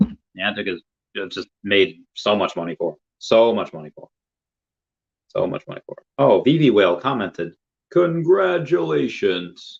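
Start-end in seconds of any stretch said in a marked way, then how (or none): 7.9-9.8 high-pitched, rough announcer voice. Reading out a comment: Super Smash Brothers announcer voice. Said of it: "impression of the announcer from Super Smash Brothers".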